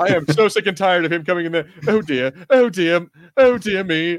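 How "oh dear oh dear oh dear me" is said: very slow, drawn-out droid voice. Complaining about C-3PO, then mocking his lines; C-3PO impression. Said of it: "let's recycle C-3PO".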